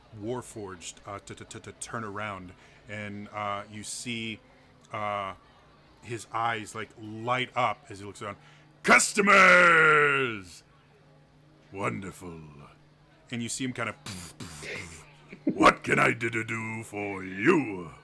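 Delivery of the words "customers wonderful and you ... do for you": put-on deep dark booming voice, louder. Voicing a Warforged shopkeeper who hears someone enter: deep dark voice. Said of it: "this deep, d-, d-, dark voice".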